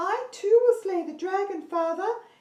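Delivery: very high, loud princess voice, placed in forehead. Demonstrating voice placement for a class, high forehead princess voice. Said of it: "She's in the forehead area".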